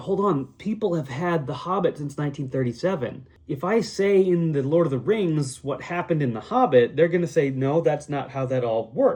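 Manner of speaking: ordinary talk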